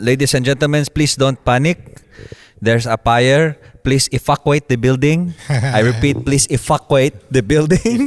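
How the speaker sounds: put-on Filipino accent in announcer style. Retelling an announcement over the microphone at a recreation center: imitating a Filipino accent. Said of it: "a story about the Filipino accent".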